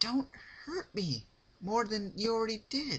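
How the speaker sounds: frightened, crying pleading voice.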